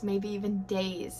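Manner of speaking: usual speaking voice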